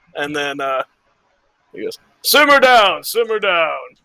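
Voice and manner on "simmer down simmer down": big, resounding, hall-filling booming voice. Narrating Brilf greeting the four of you at his hunt, booming Brilf voice. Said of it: "this booming voice".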